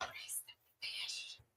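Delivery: hushed whisper, barely voiced, very quiet. Leaning into another character at a cult gathering: whispering. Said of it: "leans into, like, one of them and whispers".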